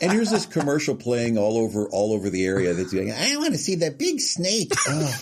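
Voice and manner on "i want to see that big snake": put-on very high, sing-song five-year-old child voice. Recalling voicing a kid for a commercial, five-year-old kid voice. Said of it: "I had to be the voice of the five-year-old kid".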